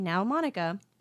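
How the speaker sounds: very sweet, gentle, soft-spoken tone. Recalling a strict woman speaking in the sweetest way: imitating someone sweetly. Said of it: "in the sweetest way possible".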